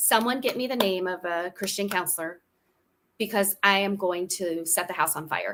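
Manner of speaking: ordinary delivery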